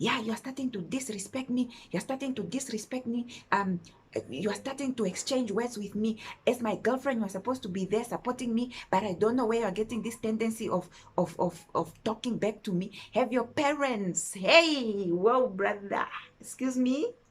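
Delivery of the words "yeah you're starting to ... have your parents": put-on heated, lecturing shout. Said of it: "why are you shouting?".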